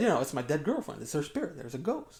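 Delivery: ordinary talk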